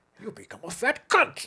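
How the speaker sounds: put-on formal old-fashioned stately voice. Retelling what a mother said to the speaker: Sean Connery voice. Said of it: "Possessed by the ghost of Sean Connery".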